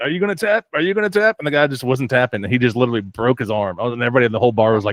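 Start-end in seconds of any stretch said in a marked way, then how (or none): 0.0-1.4 acted high yell, repeated over and over. Retelling a fighter holding an arm bar: imitating someone yelling.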